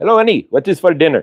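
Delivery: put-on Indian accent. Repeating a movie character's line he practiced thousands of times, indian accent impression. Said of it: "The Indian guy".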